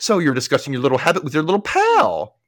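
irritated and angry, high with swooping pitch. Retelling what Susan said while cutting carrots, imitating Susan's angry remark. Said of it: "angrily cut up some carrots and says".

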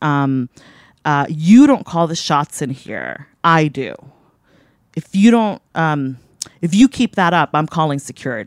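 ordinary talk, nothing marked

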